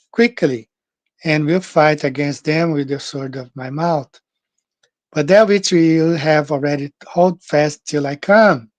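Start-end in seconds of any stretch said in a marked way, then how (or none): none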